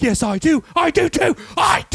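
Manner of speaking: put-on frantic, high, freaked-out, furious insistent tone. Retelling a movie scene where a character argues back: imitating a character freaking out. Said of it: "He's freaking out on her".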